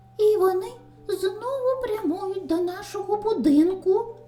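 sudden, high, excited crying out. Narrating a young rabbit warning about wolves at the house: exclaiming. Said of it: "вигукнув Вінні".

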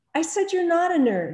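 defensive. Jackson answers Rebecca after she whirls to glare at him, defensive. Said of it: "he said defensively".

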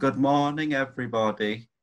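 play-acted, oddly sarcastic tone. Recalling how they greeted everyone each morning before the music: imitating a weird sarcastic greeting. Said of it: "in that weird sarcastic tone".

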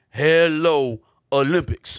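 loud, silly, dumb-sounding character voice. Reading a tweet aloud as its writer: dumb Master T impression. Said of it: "your dumb impression of Master T".

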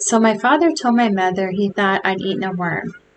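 ordinary delivery

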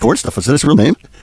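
ordinary talk

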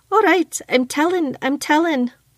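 high, slow, words bubbling through giggles. A maid ducks away from her mistress's raised jug, giggling.

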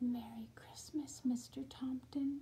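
awed, soft hush, words barely voiced. Narrator reading Leon kneeling close to a little gnome to greet him, in a hushed voice. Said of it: "in a hushed voice said".

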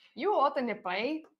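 Scottish-attempt accent that comes out Irish. Retelling what someone's mom used to say, in a Scottish accent that sounds Irish. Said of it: "that's Irish, man".

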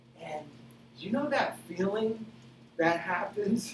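cracking voice, high and halting, breaking mid-phrase. Describing the feeling of getting into the water, voice cracking. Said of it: "Did my voice crack when I said this?".

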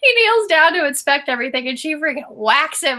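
laughing through the words. Retelling a scene she watched and found funny, laughing while speaking. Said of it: "sorry, I'm laughing".

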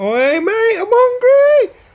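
speaking as a cat. Describing a pet cat that wants food, voicing a hungry cat. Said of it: "I've got that".

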